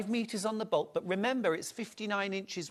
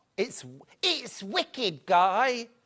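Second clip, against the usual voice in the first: mock Cockney accent, higher pitch; 3 semitones higher than usual. Trying out a line like an audition for a show reel: put-on Cockney accent. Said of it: "Cockney accent".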